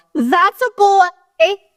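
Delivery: play-acted squeaky, very high, shrill teen-girl shout. Recounting a girl shouting about her, imitating a girl yelling. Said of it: "why did this girl yell".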